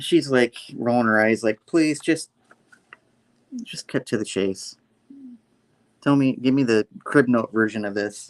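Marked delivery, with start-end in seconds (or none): none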